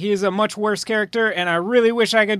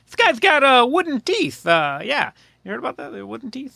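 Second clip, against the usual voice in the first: pitch swinging widely up and down; 3 semitones higher than usual. Joking about an actor playing John Adams: terrible Paul Giamatti impression. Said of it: "That's a terrible Paul Giamatti impression".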